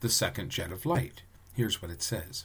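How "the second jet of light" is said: plain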